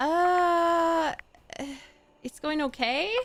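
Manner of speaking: sounding unsure and hesitant. Answering a friend's question about dating: sounding unsure. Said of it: "Why do you sound unsure?".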